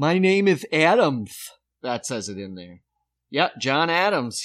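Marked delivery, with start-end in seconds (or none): 0.0-1.5 put-on lisping voice, higher and louder. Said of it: "and so he talked with a lisp".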